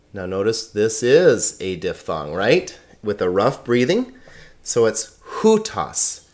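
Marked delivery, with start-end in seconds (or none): 5.4-6.1 slow hutas with stress on first syllable, HU-tas. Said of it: "The accent is on the first syllable".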